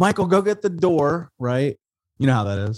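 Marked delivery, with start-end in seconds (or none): 0.0-1.3 mock high, hollering calling yell. Retelling his grandma calling michael to get the door: imitating grandma yelling. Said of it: "My grandma yells".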